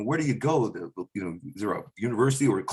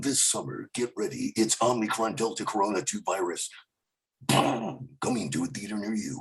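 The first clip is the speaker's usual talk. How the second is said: big-screen movie trailer announcer voice; 3 dB quieter than usual. Imagining how the movie trailer guy would describe things: movie trailer guy voice. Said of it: "how would the movie trailer guy describe the last two years".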